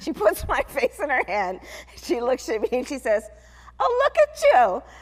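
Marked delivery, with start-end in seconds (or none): 3.8-4.8 put-on Yiddish-inflected English accent.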